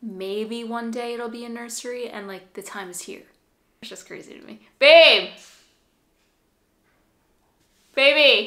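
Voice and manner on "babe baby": full-on shriek, very loud and high. While recording for their vlog channel, calling out to babe, screaming. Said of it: "Why are you screaming".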